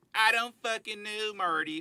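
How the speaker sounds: very high, loud, slow country trailer-park voice. Showing how the character Ruth talks: Ruth voice. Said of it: "this is how Ruth talks".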